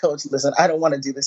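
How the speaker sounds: ordinary talk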